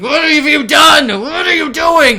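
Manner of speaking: snarling, shrill, very high and very loud. Narrating a stricken man whose eyes go wide, voicing his words, snarling. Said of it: "he's snarling".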